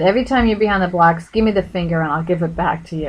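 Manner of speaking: ordinary talk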